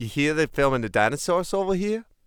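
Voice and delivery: bad, attempted New Zealand accent. Admitting they can't do it, then trying: attempted new zealand accent. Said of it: "That's a New Zealand accent".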